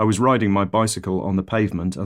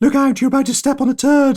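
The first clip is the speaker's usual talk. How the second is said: very high-pitched, loud voice; 6 dB louder than usual. Warning family about to step on a dog turd, high-pitched voice. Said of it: "I speak in a high voice".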